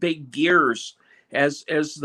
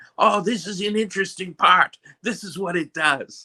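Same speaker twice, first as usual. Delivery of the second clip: funny put-on Austrian accent; 4 semitones higher than usual. Describing a man holding up machine parts, funny austrian accent. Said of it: "he's an Austrian, and he has this very funny accent".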